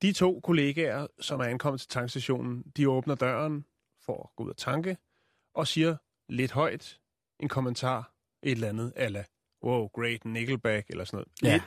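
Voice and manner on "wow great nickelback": mock-ironic, put-on sarcastic tone, pitched lower. Retelling what colleagues said out loud at a gas station, mock-ironic remark. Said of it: "Lidt ironisk".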